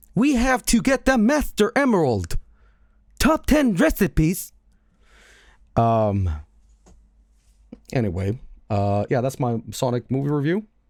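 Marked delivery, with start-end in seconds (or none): 0.2-4.5 put-on, pitched-up text-to-speech AI voice. Joking about a bird in a mecha suit: AI TikTok voice. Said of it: "The A I TikTok voice".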